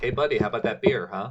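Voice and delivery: acted-out exasperated, frustrated and impatient delivery. Retelling a character asking the ignoring bartender again for beer: imitating a frustrated demand. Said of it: "getting frustrated".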